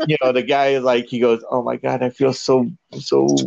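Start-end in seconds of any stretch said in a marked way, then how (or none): 1.5-3.3 mock muttering under the breath. Retelling what a man in the movie theater said: imitating someone muttering under breath. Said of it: "he even said it, like, under his breath".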